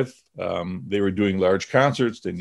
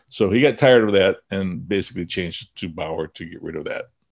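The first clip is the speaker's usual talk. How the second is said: plain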